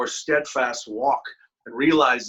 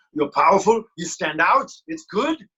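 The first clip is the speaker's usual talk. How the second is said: bad, unconvincing put-on Belgian accent, pitched up; 5 semitones higher, 4 dB louder than usual. Quoting a Belgian executive vice president's Christmas saying: bad Belgian accent. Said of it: "that didn't sound very Bel-, very Belgian".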